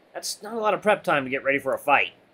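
ordinary delivery, nothing marked

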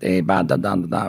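put-on heavy, thick Italian accent. Retelling a meeting where Mario shows up with another guy; Mario's Italian accent. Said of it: "Mario's Italian with the accent".

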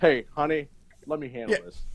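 put-on overly laid-back, too-relaxed tone. Acting out the father telling his wife he'll handle it: imitating overly laid-back father. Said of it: "overly laid back".

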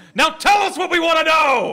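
big booming voice. Getting up in his face as intimidation, the player speaks in a big booming voice. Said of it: "and just in a big booming voice".

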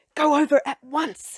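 high, loud, pressing and insistent urging. Narrator reads the librarian sending the child to the children's section, urging. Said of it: "she urged".

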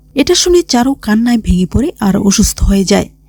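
ordinary talk, nothing marked

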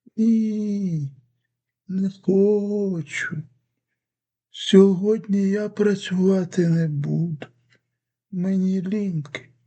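drowsy, half-awake sleepy voice, "Ні" drawn out. Narrator reads a tablet refusing a boy's request, in a sleepy voice. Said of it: "відповідає сонним голосом".

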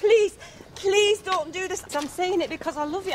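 imploring, pleading tone. In a drama, pleading with Claire not to take a drink, begging. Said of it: "I'm begging you".

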